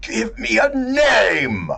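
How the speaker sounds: malicious, high, loud, slow snarling scream.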